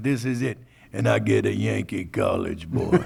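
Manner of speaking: put-on gruff, rough, swooping old river boat captain voice. Retelling the boat captain's reaction to his new deckhand, imitating the boat captain. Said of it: "so he's like".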